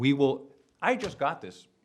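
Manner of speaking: high, loud yelling.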